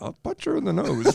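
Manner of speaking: put-on whispering. Retelling what a man said while watching an irritating woman; retelling a whisper. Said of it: "He kind of whispers".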